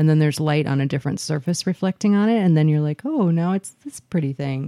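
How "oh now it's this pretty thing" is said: ordinary talk, nothing marked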